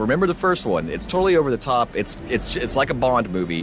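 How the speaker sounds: ordinary delivery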